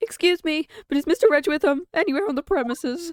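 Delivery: panicked British man voice. Voicing a character in a story who asks after someone: really panicked british man. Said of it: "Really panicked British man".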